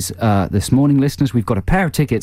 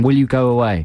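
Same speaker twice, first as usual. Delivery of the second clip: ordinary talk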